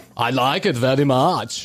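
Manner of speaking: Austrian accent, pitched low. Trying out Austrian voices on a commercial break with another speaker, Arnold Schwarzenegger impression. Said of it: "like a like an Arnold Schwarzenegger".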